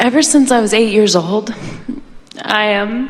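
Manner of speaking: crying, tearful, voice breaking. On a morning phone call, starting a personal story, crying. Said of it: "I don't know why I'm crying".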